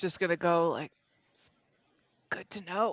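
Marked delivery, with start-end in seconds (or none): 2.3-2.9 soft, muttered under the breath. Answering in character after an unnerving moment: muttered under breath. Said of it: "kind of under my breath".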